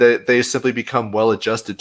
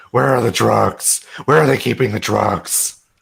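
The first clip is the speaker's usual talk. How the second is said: rough, growling voice, each word growled out. Answering a viewer's super chat request, the speaker does a Batman voice. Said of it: "your best Batman voice".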